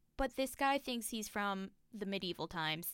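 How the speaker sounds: plain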